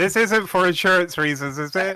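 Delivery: high-pitched, loud shouting voice. Calling a question out to someone poking their head in: shouting out a question. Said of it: "I would like to shout out".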